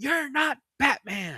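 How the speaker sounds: cold, high, slow, drawn-out sneering voice.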